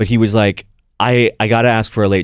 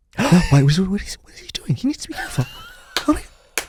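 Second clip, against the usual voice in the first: put-on worried whisper, higher and quieter; 9 semitones higher, 5 dB quieter than usual. Retelling how Fraser reacted during a show: imitating Fraser whispering. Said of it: "he'd just be whispering to".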